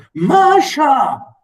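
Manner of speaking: hollow voice. Reading a story aloud, voicing a husband calling his wife: hollow voice. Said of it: "this is my hollow".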